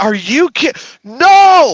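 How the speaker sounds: mock yelling. Retelling yelling at the phone while listening: imitating own past yelling. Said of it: "I'm yelling at my".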